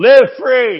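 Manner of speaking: mock shouted jab. Telling a friend's story about passing a slow driver, retelling a yell. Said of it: "He yells at him".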